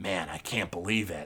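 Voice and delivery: harsh, very hushed, low half-whisper. Narrator voicing one of three figures walking away, in a harsh half-whisper. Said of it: "one of them is harshly whispering".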